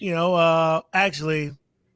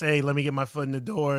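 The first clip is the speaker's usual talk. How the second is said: usual speaking voice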